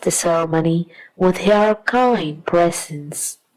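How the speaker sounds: ordinary delivery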